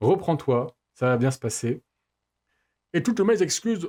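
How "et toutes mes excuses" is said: bad put-on English accent, pitched up. Speaker on mic tries out an English accent and fails: failed fake English accent. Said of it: "j'arrive pas à faire l'accent anglais".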